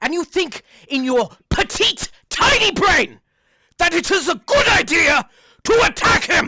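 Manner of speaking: angry scolding voice. Voicing a character who knocked a player down, angrily scolding. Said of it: "looks at you and he says".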